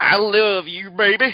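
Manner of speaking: loud, swaggering, laid-on pimp voice. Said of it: "Was it like [name]?".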